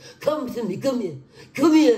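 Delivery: put-on New Jersey accent. Repeating what she said, though you can't really do her right now, use a put-on New Jersey accent. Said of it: "in a New Jersey, a Jersey accent".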